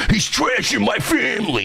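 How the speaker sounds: very high, freaked-out voice. Retelling someone freaking out over his wife: Stuttering John voice. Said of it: "he sounded like fucking Stuttering John".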